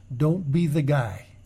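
normal talking voice

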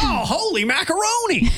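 very high, quirky elementary-teacher voice exclaiming. Joking about who would say a phrase: quirky elementary school teacher voice. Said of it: "kinda quirky, like, elementary school teacher would say".

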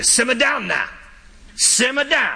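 put-on Cajun accent.

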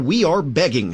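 ordinary talk, nothing marked

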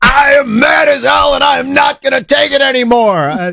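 shrill, furious ranting shout, very high pitched. Acting out a Senate nominee's rant over the new congressional map, as a Network impersonation. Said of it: "she's doing her best network impersonation".

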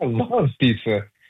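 genuinely enthusiastic, excited, eager delivery. Explaining how voice carries feeling, giving an example phrase, excited. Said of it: "then you can hear the excitement".

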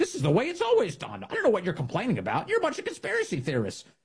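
high, mocking whiny voice.

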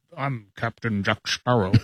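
put-on Scottish accent, rolled out. Given Johnny Depp to impersonate, doing Captain Jack Sparrow: Sean Connery-like impression. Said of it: "doing a Sean Connery impersonation".

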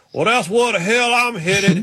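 high, slow put-on Southern drawl. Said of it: "He goes".

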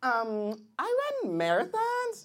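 put-on young woman voice, swooping.

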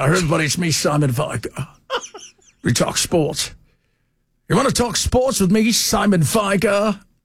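posh upper-class schoolboy voice. Recalling a public-school guy who practiced his voice, speaker does the Simon Vigar voice. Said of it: "he talked like that for real".

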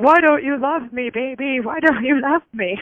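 acted-out high, drunken cooing voice. Retelling how a drunk woman cooed in her newborn's face, imitating a drunk woman cooing. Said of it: "She was real drunk in my baby's face going".

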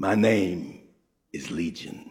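very low, soft, hushed demonic growl. Telling a story about a man, acting out what he said: retelling a growl. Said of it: "He growled".

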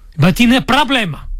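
put-on Syrian accent. Retelling what he told a hotel man, in a put-on Syrian accent. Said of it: "Y puse sirio con él".

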